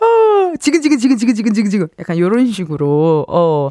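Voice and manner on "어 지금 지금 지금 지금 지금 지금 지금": mock yawning, higher pitch. Imitating someone posing for photos over coffee: imitating a fake yawn. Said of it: "괜히 하품하는 척".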